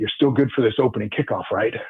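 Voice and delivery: imitated thick Italian accent. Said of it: "he's got that thick Italian accent".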